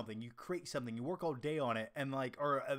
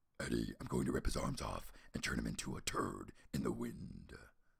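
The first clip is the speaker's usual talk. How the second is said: put-on monster voice, pitched lower; 4 dB quieter than usual. Answering a viewer who asked for an impression: Venom voice. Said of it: "my Venom impression".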